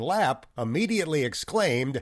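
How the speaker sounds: usual speaking voice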